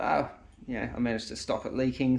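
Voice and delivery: ordinary talk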